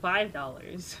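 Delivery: plain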